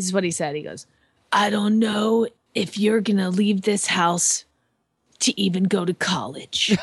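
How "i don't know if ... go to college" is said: put-on icy, chilling, ice-cold voice. Speaker quoting what he once said to her, imitating a chilling ice-cold voice. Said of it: "like the chilling, ice cold".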